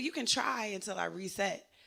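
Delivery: ordinary delivery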